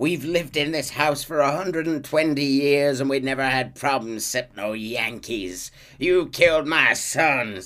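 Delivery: furious, angry ranting outburst. Retelling a story, the speaker voices a woman whose sons were killed, imitating Mrs. Braithwaite ranting. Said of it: "she's ranting".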